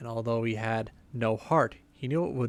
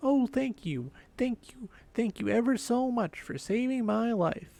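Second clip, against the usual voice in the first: very high, tiny squeaking mouse voice; 12 semitones higher than usual. Narrator reads the freed field mouse speaking to the woodman, in a squeaky little voice. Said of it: "in a squeaky little voice".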